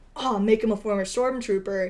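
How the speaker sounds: ordinary delivery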